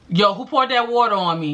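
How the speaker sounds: put-on the thickest possible New York accent. Retelling a man's reaction after water is poured on him: thick New York voice. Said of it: "in the most New York voice you could even think".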